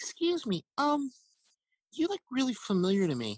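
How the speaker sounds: put-on high, swooping young voice. Retelling speaking to a woman at the dentist, in his twelve-year-old preteen voice. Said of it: "my twelve year old preteen ... pre hormone drop voice goes".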